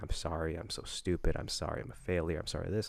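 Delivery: acted whimpering. Speaker retelling when they broke down crying, imitating own past whimpering. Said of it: "just kept whimpering and saying".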